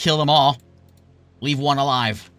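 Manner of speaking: loud shouting. Game narrator voices a leader shouting to the Lizardmen; shouting orders. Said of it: "he shouts to the Lizardmen and loud enough".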